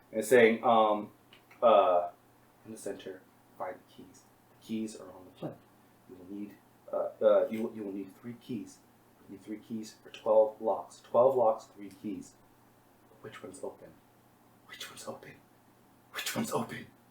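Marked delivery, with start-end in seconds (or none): 2.6-16.8 very quiet, fast, whispered mumble. A game master voices what the player finds as they get closer, mumbling really quietly. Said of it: "is mumbling like really quietly".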